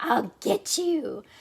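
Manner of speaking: threatening, cackling witch voice. A character shows another how witches sound, in a cackling witch voice. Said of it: "Witches cackle like".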